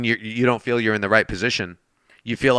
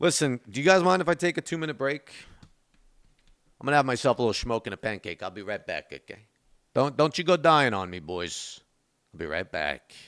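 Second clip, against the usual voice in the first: speaking with Italian accent; 7 dB quieter than usual. Speaking to the boys he's with, in an italian accent. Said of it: "I need to stop with this Italian accent".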